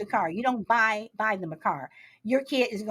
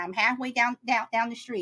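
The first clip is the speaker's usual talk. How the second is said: ordinary talk, nothing marked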